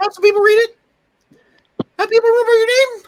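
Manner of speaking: put-on voice, squeaky-high, shrill, very loud, belted. Voicing a character talking about a plan to write periodicals: Stewie voice. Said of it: "the Stewie voice".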